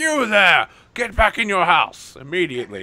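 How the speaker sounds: high, commanding shouted yell. Voicing a guard ordering someone home: NPC guard yelling. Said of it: "an obligator that's yelling at him".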